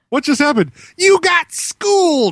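very high pitch, very slow, every word drawn out. Doing an impression of Wallace Shawn after others praise him: Wallace Shawn impression. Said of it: "That's a good impression".

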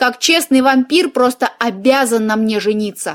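plain

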